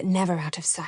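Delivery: plain reading voice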